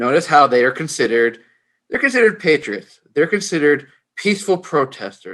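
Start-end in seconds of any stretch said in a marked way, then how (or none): 3.1-5.3 utmost sarcasm on the word peaceful. Criticizing how the protesters are labeled, sarcastic on the word peaceful. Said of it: "I say peaceful with the m-, most highest level of sarcasm".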